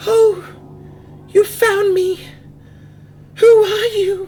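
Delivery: very high, ghostly voice, somewhat loud. Game narrator voicing a hidden being a player has found; ghostly Star Fallen voice. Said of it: "You hear a ghostly voice".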